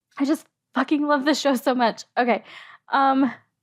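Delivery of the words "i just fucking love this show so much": high, teary voice, talking through tears. Reacting to the show just played, crying while talking. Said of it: "It's ridiculous that I am crying right now".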